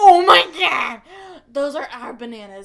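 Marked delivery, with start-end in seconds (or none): 0.0-1.0 full-on, very loud screaming outburst. Recounting sitting in the back row of a show with a companion: retelling screaming. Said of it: "like screaming".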